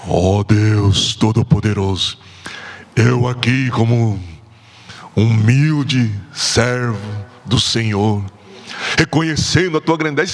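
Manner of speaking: grandiose, pious, put-on solemn prayer intoning, very low. Showing how some people pray: affected solemn prayer voice. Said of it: "impostar a voz".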